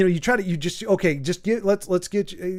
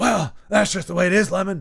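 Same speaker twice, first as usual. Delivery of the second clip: put-on rough, gravelly smoker voice. Quoting a character from Thirty Rock: Baldwin smoker voice. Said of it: "Baldwin had the smoker talk".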